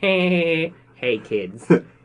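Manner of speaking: put-on East Coast accent. Describing the security guard the voice was based on, speaker imitates him: Peter Griffin East Coast accent. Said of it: "so it's like a an East Coast accent".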